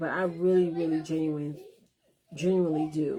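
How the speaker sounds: heartfelt, on the verge of tears. Thanking everyone for the birthday blessings: on the verge of tears. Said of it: "I don't want to start crying".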